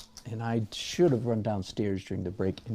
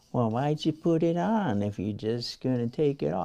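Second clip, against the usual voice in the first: squeaky, high-pitched mocking voice; 5 semitones higher, 4 dB louder than usual. Imitating some questioner the speaker always hears, in a squeaky voice. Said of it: "some squeaky person saying".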